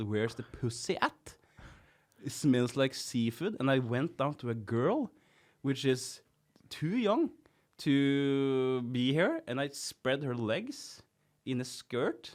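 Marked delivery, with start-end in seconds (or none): none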